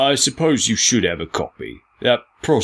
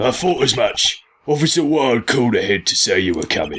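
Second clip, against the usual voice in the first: put-on Cockney accent; 3 semitones higher than usual. Playing the chief, answering the defending lawyer, in a Cockney Batman voice. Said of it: "A Cockney Batman".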